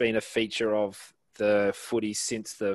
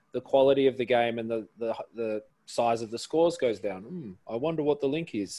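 ordinary delivery

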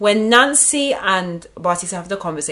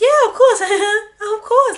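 put-on giggly woman's voice, higher and louder; 5 dB louder than usual. Retelling a reality-show moment, imitating Nancy giggling. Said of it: "your impression of Nancy is dead".

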